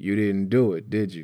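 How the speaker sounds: ordinary delivery, nothing marked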